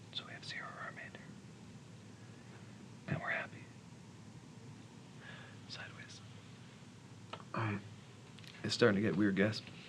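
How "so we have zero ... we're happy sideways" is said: whispered mumble under the breath. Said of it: "I'm just gonna mumble to myself".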